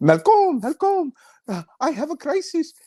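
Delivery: put-on heavy French Canadian accent, very high-pitched. Retelling a phone call from a colleague: imitating a heavy French Canadian accent. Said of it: "she's French Canadian, so she has this huge accent".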